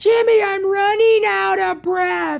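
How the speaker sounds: sloppy, swallowed consonants. Showing how Carl drops his consonants: Carl voice dropping consonants. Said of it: "Another thing that Carl does is I drop my consonants".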